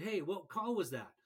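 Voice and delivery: ordinary talk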